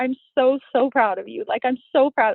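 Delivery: high voice, speaking through tears. Retelling what the crying husband said in a video: imitating someone crying. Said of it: "he was crying".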